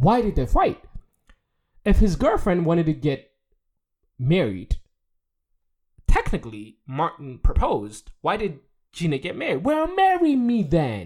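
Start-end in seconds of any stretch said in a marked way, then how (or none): 9.6-11.1 high, swooping, drawn-out delivery. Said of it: "that voice that he does".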